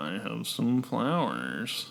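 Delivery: put-on cartoon turtle character voice. Playful back-and-forth, a line delivered in a turtle voice. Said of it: "I'm doing a turtle voice".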